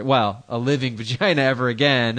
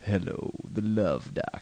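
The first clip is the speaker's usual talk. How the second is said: deep, soft, breathy, sexy late-night radio DJ voice; 3 semitones lower, 9 dB quieter than usual. Podcaster explaining his intro by doing a midnight radio dj, deep, sexy late-night dj voice.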